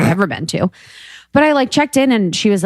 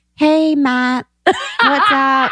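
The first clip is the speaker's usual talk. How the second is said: put-on, higher, brighter fake voice; 7 semitones higher than usual. Imitating own past faked voice when greeting a boy: imitating own faked bright voice. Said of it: "faked a voice".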